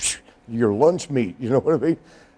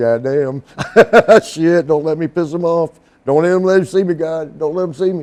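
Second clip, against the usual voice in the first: acted-out anxious, nervous, pleading tone; 3 semitones higher, 5 dB louder than usual. Retelling sitting in a rough neighborhood watching armed men walk by: retelling own past nervous thoughts. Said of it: "you can see 'em walking by like".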